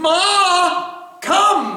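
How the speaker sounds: very high, loud yell, Ma drawn out. Explaining audible pronunciation by calling someone far away: yelling across the room. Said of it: "I can yell across the room".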